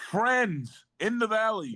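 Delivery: shrill, very high shouting. Character calling out to a group readying to fight, yelling back. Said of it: "Can I yell back".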